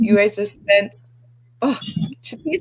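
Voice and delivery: tearful, crying through words, voice breaking. Recounting what someone said about money and their family, the speaker starts crying. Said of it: "I don't know why I'm crying".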